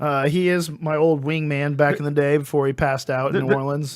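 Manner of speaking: plain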